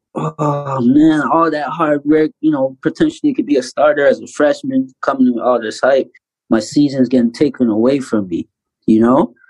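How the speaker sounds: ordinary talk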